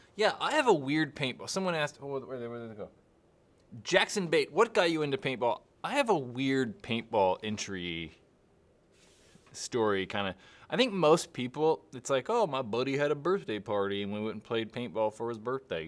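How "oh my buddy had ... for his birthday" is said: put-on casual, relaxed American southern accent. Explaining how most people got into paintball, quoting them in a southern accent. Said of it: "I don't know why that's my southern accent".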